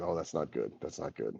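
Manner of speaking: soft, hushed whisper. Voicing a figure who whispers test results to a priestess: whispering. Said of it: "whispers to the priestess".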